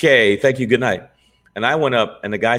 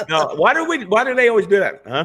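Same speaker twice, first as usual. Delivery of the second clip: normal talking voice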